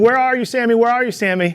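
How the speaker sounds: mock high-pitched screaming call. Retelling searching for the missing pet squirrel while neighbors watched, retelling a scream. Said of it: "And I'm screaming".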